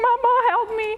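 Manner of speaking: high, tearful pleading voice.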